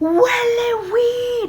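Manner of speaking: very loud, high, full-lung shrill scream. Recounting a sister storming out of her room, retelling a top-of-lungs scream. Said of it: "yell at the top of her lungs".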